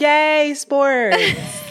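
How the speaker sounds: high, swooping, sing-song voice. Joking that the other speaker sounds like Kid Fury: Kid Fury impression. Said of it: "you sound like a Kid Fury where he's like".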